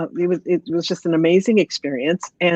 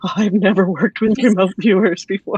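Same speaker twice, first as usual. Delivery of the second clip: put-on excited, shaking, trembling voice; 2 semitones higher, 3 dB louder than usual. Retelling the call from the man who received the report, imitating a shaking, excited voice. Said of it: "his voice is shaking".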